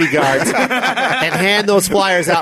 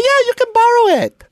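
very high, motherly mom-like voice; 3 dB louder than usual. Retelling a sister lending a tape, voicing her like the speaker's mom. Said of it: "I'm making her sound like my mom".

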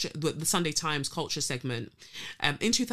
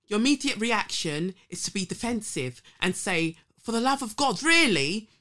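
put-on voice, raised and higher, with a lisp; 6 semitones higher, 5 dB louder than usual. Quoting a man's remarks on cultural appropriation, imitating his voice with a lisp. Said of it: "I've got to do it in his voice. ... I tried to get his lisp in there".

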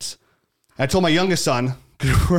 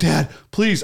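mock crying, sobbing and pleading. Recounting a child panicking while the speaker paddled, imitating a crying plea.

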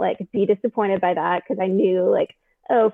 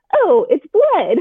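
mock cheerful, perky, high and loud voice; 9 semitones higher, 6 dB louder than usual. Recounting the moment before it hit her, she replays her first reaction in a perky voice. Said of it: "but like in this perky voice".

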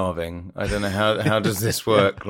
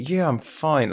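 forced, through gritted teeth, pitched up; 6 semitones higher than usual. Imitating someone asked if they're okay, answering through gritted teeth. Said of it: "like through gritted teeth".

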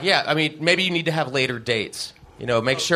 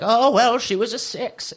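high, put-on old grandmother voice; 8 semitones higher than usual. Imagining a grandma rating the girls who come over: old grandma voice. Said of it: "That was my grandma voice".

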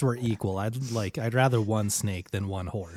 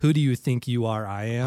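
usual speaking voice

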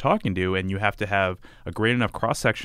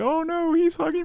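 acted, playful, jokey delivery in very high voice. Describing a scene, retelling how someone jokingly reacted to a hug, retelling a joking remark. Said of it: "jokingly being like".

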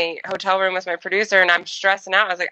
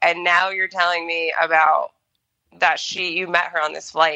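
ordinary talk, nothing marked

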